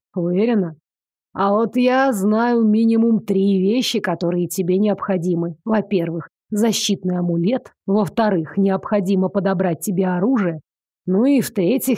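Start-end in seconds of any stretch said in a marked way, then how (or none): none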